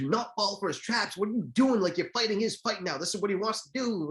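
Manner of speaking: mock, high-pitched screaming. Retelling how they sat Holyfield down: imitating someone screaming. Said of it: "were screaming at him".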